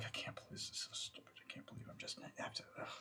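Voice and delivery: feverish whispered mutter, under the breath. A game master voices a character muttering to himself, feverish muttering under breath. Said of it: "feverish and sort of like under his breath".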